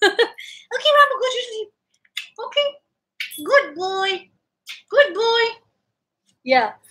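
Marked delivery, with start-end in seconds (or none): 0.0-5.4 squeaky, high-pitched pet-talk voice. Talking to the pet rambo after waking him up, in a squeaky pet voice. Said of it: "that was my pet voice. I go all squeaky".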